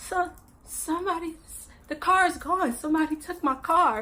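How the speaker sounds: high voice on the verge of crying, fighting tears. Retelling telling a boyfriend the car is gone: imitating holding back tears. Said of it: "'cause I'm trying not to cry".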